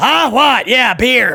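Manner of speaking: put-on high, slow, hard-of-hearing old grandpa voice. Acting out a Thanksgiving dinner scene: imitating an old grandpa. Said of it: "it's like the old grandpa".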